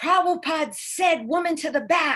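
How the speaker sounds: yelling, high-pitched. Recounting a man who came close and yelled in the speaker's ear; retelling a yell. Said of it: "yelled right in my ear".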